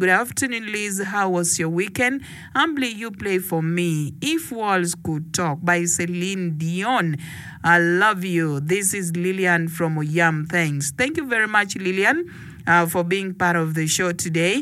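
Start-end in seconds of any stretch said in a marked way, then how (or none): none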